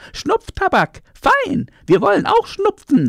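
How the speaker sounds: very high, excited shrieking cry. Narrator reads the monkeys' words to the cat, calling out. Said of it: "riefen sie".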